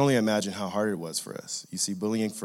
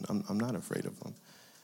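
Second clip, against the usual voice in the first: ordinary delivery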